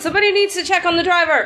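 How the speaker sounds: very high, in-character shout. Shouting in character to the others during a fight: in-character shout. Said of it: "And I'll shout out".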